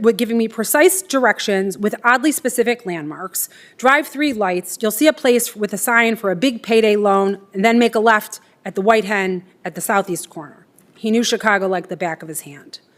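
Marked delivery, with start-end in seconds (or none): none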